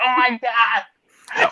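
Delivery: slow, high, mortified groan. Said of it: "I'm like".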